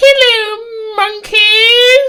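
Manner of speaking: shrill villain voice, drawn-out "hello", pitch way up. Talking about playing Xenoverse, act out the character showing up, with a terrible Frieza impression. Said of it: "terrible impression".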